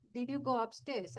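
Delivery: ordinary talk, nothing marked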